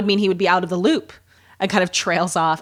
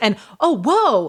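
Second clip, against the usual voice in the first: put-on folksy good old boy delivery, pitched up; 3 semitones higher than usual. Retelling how an actor delivered a line: imitating a good old boy read. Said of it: "in this very good old boy read".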